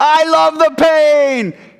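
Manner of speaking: full-volume, very high, shrill, booming, long pained scream. Speaker recounts what a man would scream at them, retelling a scream. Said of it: "scream this".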